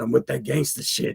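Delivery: small, soft, rough, raspy little voice. Repeating exactly what a homeboy said when he joined: imitating Sykes's raspy voice. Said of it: "he has a little raspy ass voice".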